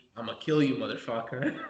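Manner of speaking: hushed, threatening half-whisper. Retelling what opponents said during judo matches: imitating a half-whisper. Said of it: "I've had guys whisper to me".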